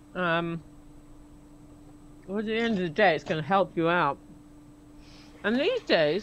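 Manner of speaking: speaking with food in mouth. Speaker in conversation, talking while half eating something. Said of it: "I'm half eating something".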